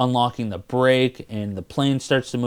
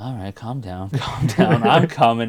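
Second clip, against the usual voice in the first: put-on reluctant hero character voice. Retelling the movie hero agreeing to a fight: imitating reluctant Indy. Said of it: "reluctantly starts to fight this guy".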